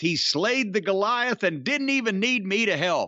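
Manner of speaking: ordinary talk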